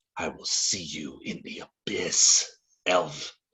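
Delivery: soft, low, snakelike hissing voice. Narrating a game, an unseen woman speaks to an elf: soft hissing voice. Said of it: "You hear a soft hissing voice say".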